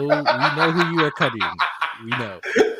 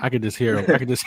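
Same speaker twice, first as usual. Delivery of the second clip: usual speaking voice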